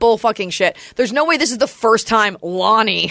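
ordinary delivery

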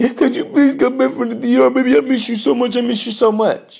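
high, tearful, crying, whining voice. Acting out a grown man begging a woman on the phone, mock crying and whining. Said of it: "no woman wants to hear a grown man crying, whining".

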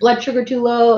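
acted-out snarky tone. A player recounts needling the umpire over line calls, retelling a snarky remark. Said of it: "like very snarky".

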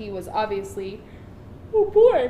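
yawning while talking. Retelling a secondhand story quickly, the speaker starts yawning while talking. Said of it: "that is what yawning is".

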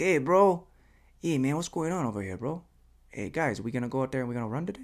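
put-on Spanish-accented English. Wondering where Kip was from, imitating Kip's accent. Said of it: "he had this accent".

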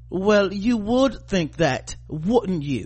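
put-on English accent. Mocking the typical lines in a show, in an english accent. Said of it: "in an English accent".

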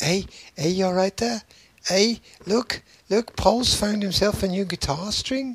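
put-on Liverpool accent. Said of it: "where's my Liverpool accent?".

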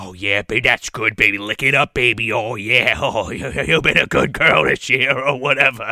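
deep, low put-on character voice, laid on thick. Retelling a movie scene where the snowman watches her suck ice: Jack Frost voice. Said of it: "Jack Frost is like".

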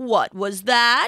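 put-on weak, croaking voice of a dying old lion. Reading a fable, the dying lion answers the gazelle, croaking. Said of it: "the lion croaked".

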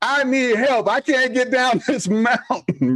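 acted-out, yelled, screaming cry. Retelling being stuck on skis on a mountain, re-enacting screaming for help. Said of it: "And I was screaming".

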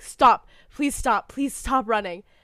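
desperate scream. Recounting a story, the speaker acts out a character begging a companion to stop, retelling a scream.

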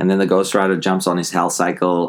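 plain

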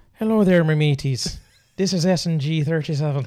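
Irish-sounding voice. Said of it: "it sounds Irish".

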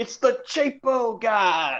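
shrill, high, stretched-out shout. Picturing the listener sliding past people, imitating someone yelling. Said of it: "just yelling".

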